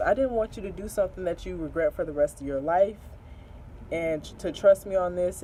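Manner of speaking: plain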